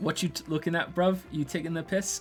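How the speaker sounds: try-hard British accent. Asked for a best impression of a British accent: imitated British accent. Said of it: "Can you do your best impression of a British accent?".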